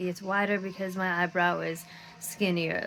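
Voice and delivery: plain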